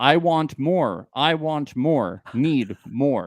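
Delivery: overdramatic, exaggerated, loud, drawn-out reading. Acting out someone's line from a bed scene, exaggerated dramatic reading. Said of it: "my dramatic reading of that".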